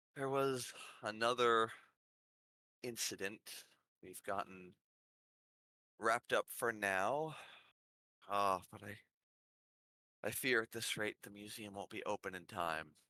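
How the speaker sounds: exhausted, worn-out, very tired, weary voice. Voicing the Archduchess responding to Fleece at the door: very tired voice. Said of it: "you hear her very tiredly respond".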